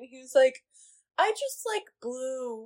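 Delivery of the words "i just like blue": mock hushed, mournful little voice, very quiet, slow. Retelling what a man who confuses colors said: imitating a sad voice. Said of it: "in such a sad voice".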